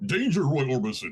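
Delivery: put-on classic old TV sci-fi robot voice. Showing James how the voice goes, Lost in Space robot voice. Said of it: "the voice of the robot from Lost in Space".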